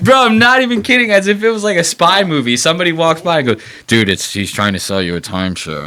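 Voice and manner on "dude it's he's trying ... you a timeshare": put-on hushed mutter under breath, lower. Retelling a passerby's warning while walking by: imitating someone muttering under breath. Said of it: "underneath their breath".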